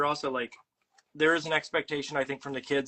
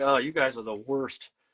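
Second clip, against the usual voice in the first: mock sarcastic teasing tone. Retelling a joke made to a college classroom: mock sarcastic teasing. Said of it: "as a joke to them sarcastically".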